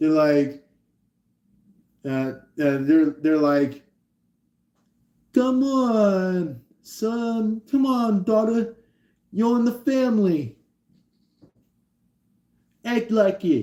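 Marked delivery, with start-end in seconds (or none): 5.4-13.6 very high put-on Italian accent, long "on". Imitating an Italian parent speaking to their child: put-on Italian parent voice. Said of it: "somebody who's, like, authentically Italian speaking to their child".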